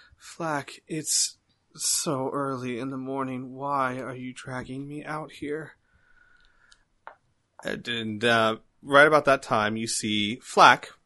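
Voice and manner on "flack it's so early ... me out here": soft feminine woman's character voice. Narrating a scene, you voice a woman speaking to Flack: feminine voice. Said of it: "obviously feminine voice go".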